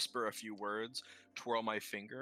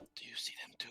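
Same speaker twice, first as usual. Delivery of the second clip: whispering quietly, quieter. Voicing a character who wakes and messages an ally on watch: quiet whisper. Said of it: "and quietly whisper".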